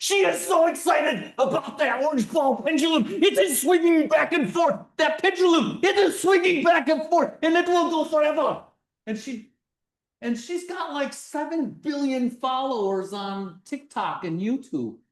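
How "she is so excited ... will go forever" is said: put-on loud, high, thickest Russian accent, gushing. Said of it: "in her very, very thickest Russian accent".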